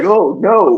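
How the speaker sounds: robot voice sounding dismayed. Retelling a game where a droid is dismayed at its owner: imitating a dismayed droid. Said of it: "And the droid was like".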